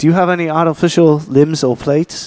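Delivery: poor, put-on English accent. Quoting a question to the listeners, in a horrible English accent. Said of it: "that quote that I just made in a horrible English accent".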